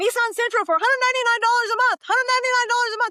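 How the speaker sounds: very high, loud, acted street hawker's yell. Speaker acts out a man in a car yelling at a parade crowd: retelling a yell. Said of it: "he's just yelling at all of these people".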